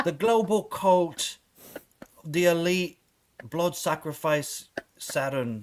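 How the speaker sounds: put-on drawn-out words, British accent. Describing to the others how David Icke talks; David Icke impression. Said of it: "he's always like".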